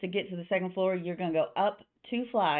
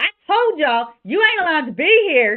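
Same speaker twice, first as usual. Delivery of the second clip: very high, very loud angry shout; 9 semitones higher, 12 dB louder than usual. Narrator voices a woman yelling at the people down the bar, angry yelling. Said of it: "you just hear her start yelling like".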